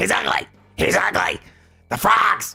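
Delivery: rough, high-pitched ranting voice. Insulting the tech reviewer again after announcing the voice, in your best Alex Jones voice. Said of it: "in my best Alex Jones voice".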